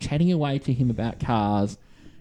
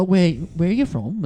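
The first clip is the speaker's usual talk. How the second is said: put-on chatty Australian accent, pitched up; 6 semitones higher, 3 dB louder than usual. Speaker retells a man asking where they're from, imitating an aussie accent. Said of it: "a pretty pretty bad British accent".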